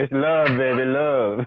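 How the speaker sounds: very slow, put-on French seductive voice. Answering a caller who asks who is talking in the background: sounding like a french porn star. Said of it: "a French porn star".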